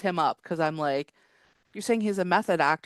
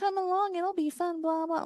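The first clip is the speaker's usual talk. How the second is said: very high, mocking, taunting voice; 13 semitones higher, 3 dB quieter than usual. Retelling how a man mocked others, do his mocking voice. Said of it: "doing like a mocking voice".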